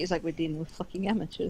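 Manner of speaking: defeated sigh. As Marco, looking down at stuff chucked on the floor, sighing, defeated. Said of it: "Marco's gonna sigh and look at the ground".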